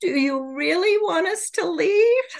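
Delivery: put-on sorrowful, very high, very sad voice. Recounting channeled beings speaking to a woman after her prayer: retelling a very sad voice. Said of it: "in a very sad voice".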